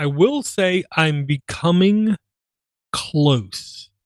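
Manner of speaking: very slow, each word stretched out. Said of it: "I'm saying this very slowly".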